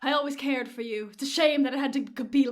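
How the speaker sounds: put-on British accent. Retelling a scene, a character speaks to another while being arrested: British accent. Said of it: "I'm doing a British accent".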